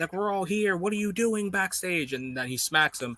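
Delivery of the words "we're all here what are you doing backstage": play-acted screaming, shouted and demanding. Acting out a wrestler screaming at another who didn't help: imitating MJF screaming. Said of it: "M J F is probably screaming at him".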